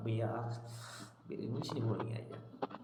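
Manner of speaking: low, soft, fed-up, ashamed groan, sighed out.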